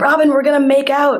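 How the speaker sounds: mock screaming. Retelling what her friend Anna screamed at her, retelling a scream. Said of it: "she screamed".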